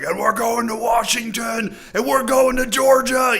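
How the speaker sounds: very high, fired-up, excited yelling shout. Act out an american politician getting excited at one of his rallies, imitating his excited yelling. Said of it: "yelling like, just getting excited".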